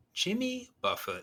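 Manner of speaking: very high, cheerful, happy delivery. Friends ask him to say a name in different emotions, happy. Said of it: "say it happy".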